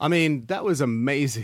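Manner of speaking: bubbling with excitement, enthusiastic. Asked in an interview what a special gathering was like, answering excited. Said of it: "You can probably hear the excitement in my voice".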